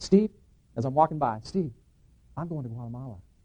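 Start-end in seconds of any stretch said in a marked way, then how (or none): 1.4-3.2 tiny, feeble, very quiet, low voice. Retelling his brother calling out to him from behind the counter, little feeble voice. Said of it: "this little feeble voice comes out".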